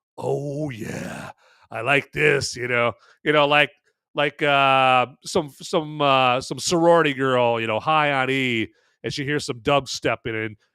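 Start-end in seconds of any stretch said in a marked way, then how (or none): 0.2-2.6 rough, slow, unhurried creaky drawl. Imagining Remick arriving at the juke joint: Remick impression. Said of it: "Remick's like".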